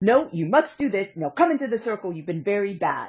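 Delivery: strict, put-on German accent. Speaker retelling how he ordered people into the circle, strict German voice. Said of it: "in a very strict-ish German going".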